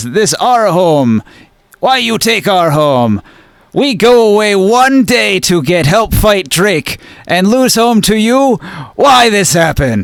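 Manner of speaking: every word bleated like a goat. Voicing the Goathead Giants of Clan Bag demanding answers, bleating goat voice. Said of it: "They they bleat with their with their goat voices".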